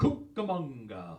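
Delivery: exaggerated pronunciation. Recalling how they used to call out the last name on a list, exaggerated delivery. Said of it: "they would say it sort of exaggerated like that".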